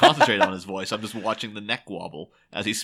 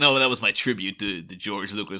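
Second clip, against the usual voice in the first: plain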